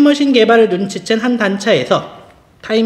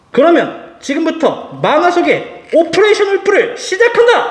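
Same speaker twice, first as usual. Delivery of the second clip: put-on mad scientist voice, higher pitch; 7 semitones higher than usual. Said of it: "광기의 매드 사이언티스트 호인 쿄마다".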